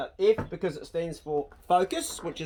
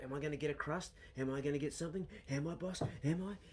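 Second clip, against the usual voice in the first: put-on dog voice, quieter; 12 dB quieter than usual. Voicing what the dog Poe thinks while begging: voicing the dog Poe. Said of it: "Poe's like".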